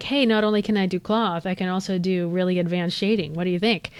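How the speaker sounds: ordinary talk, nothing marked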